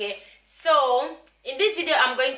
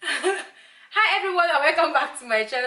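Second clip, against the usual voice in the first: words spoken through laughter; 4 semitones higher than usual. Restarting a channel intro after picking up her daughter, laughing while talking. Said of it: "I'm laughing because of my daughter".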